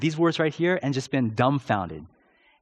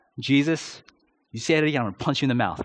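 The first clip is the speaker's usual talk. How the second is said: ordinary talk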